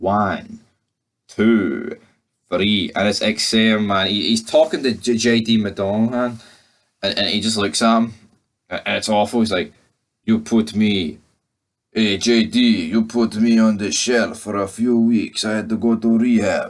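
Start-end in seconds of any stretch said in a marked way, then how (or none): 10.2-16.7 put-on Russian accent, tough-guy delivery. Acting out one man talking to the opponent he ends up brawling with, in a put-on Russian accent. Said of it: "I don't know why I'm doing a Russian accent".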